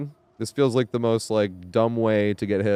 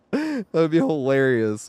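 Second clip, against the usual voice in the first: cracking, breaking voice, going up high; 5 semitones higher than usual. Talking about who he would want to play with, voice cracking. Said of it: "my voice cracked".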